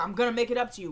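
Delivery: ordinary delivery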